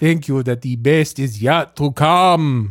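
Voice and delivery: stretched, drawn-out vampire voice. Talking with another speaker, in a Count Dracula accent. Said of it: "Why do you sound like Count Dracula?".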